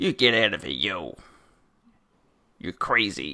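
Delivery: low, fake put-on American accent. Show host telling listeners who don't wash their hands to leave, in a put-on American accent. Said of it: "I'm doing my American accent again".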